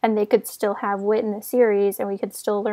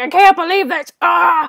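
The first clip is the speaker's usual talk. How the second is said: pitched-up, groaning grumble; 8 semitones higher, 9 dB louder than usual. Acting out Ned complaining in a made-up scene: groaning.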